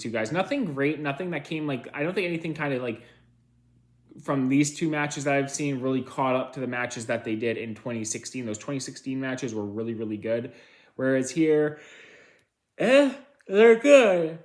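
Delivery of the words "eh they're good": yawning, words drawn out and raised in pitch. Reviewing wrestling matches, the speaker yawns while talking. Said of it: "Sorry for yawning".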